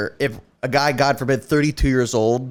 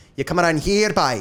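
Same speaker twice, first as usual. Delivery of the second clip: dropping into a put-on Scottish accent; 3 semitones higher than usual. Demonstrating the trigger phrase used to slip into an accent: Scottish accent. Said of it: "for me to get into Scottish".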